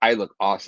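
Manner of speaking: ordinary talk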